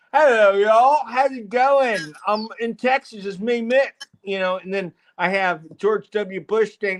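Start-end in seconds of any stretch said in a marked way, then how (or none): 0.1-3.9 put-on British accent, pitched up. Contrasting two voices, imitating a British speaker. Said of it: "the two different voices you hear".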